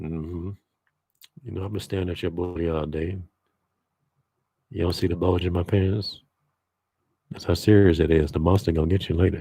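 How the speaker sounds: low, hushed, private talk. Showing how to talk into a woman's ear: half-whispering in someone's ear. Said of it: "kinda talk low all the time".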